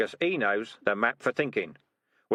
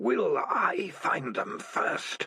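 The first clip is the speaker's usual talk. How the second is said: strange, otherworldly alien voice; 7 semitones higher than usual. Reading a story aloud, a voice speaks inside a cat's head: alien voice. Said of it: "said an alien voice in Morris's head".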